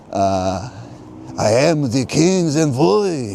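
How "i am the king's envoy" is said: put-on French accent, high pitch, slow and drawn out. Telling a story, speaker voices the king's envoy at Rothschild's: put-on French accent. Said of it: "that's my best French accent".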